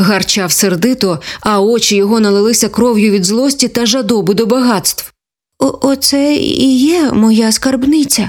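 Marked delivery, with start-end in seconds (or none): 5.6-8.3 slow, measured, gentle-paced, unhurried. A small gopher answers a bear who growled at it angrily; said quietly. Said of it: "стиха промовив зубрик".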